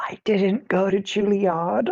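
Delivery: whispered speech. Leaning in to a companion while leaving, in character: whispering. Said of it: "just whisper".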